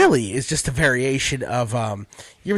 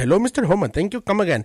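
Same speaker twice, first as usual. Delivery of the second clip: slightly high-pitched stock Indian accent. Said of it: "my Indian accent started off as everyone else's".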